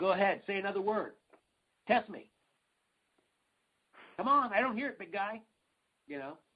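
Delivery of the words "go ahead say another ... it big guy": play-acted huge booming goading voice, pitched up. Speaker retells a man on a stage taunting someone, in a booming Sam Kinison-type voice. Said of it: "like in a big booming voice".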